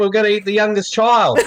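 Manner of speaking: put-on Australian accent. Speakers in a comedic bit announce a plan, in an aussie accent. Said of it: "doing our Aussie accent".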